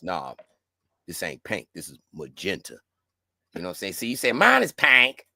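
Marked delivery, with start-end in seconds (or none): 0.0-2.8 very low, hushed, deep put-on voice. In a group arguing pink versus magenta, saying it in a deep voice. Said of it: "we supposed to say it with the deep voice".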